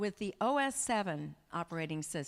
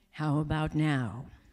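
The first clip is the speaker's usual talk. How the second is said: put-on voice assistant voice, louder; 4 semitones lower, 6 dB louder than usual. Answering a trick-or-treater who says they don't sound like Siri; Siri voice. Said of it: "You don't sound like Siri".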